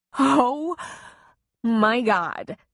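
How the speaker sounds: weak, rasping voice broken by laughter. She pulls him back up the path toward the Jeep: weak rasp, laughing. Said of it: "she rasped weakly, still hysterical with laughter".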